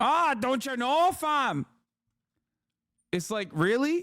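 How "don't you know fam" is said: mock Minnesota accent, much higher, slower. Mocking a dude who sounds like a Minnesota midwife, mocking Minnesota midwife accent. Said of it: "this dude sounds like a Minnesota midwife".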